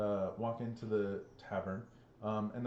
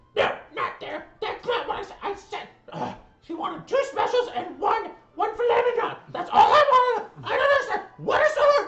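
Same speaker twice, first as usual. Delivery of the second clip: very high, very loud, shrill, booming barked voice; 14 dB louder than usual. Game master voicing a kobold at the bar, kobold barking orders. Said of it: "barking orders like".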